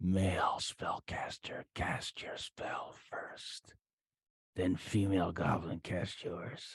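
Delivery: quiet whispered voice. Narrating a voice the players hear coming up the stairs; whispering. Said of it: "whispering up the stairs".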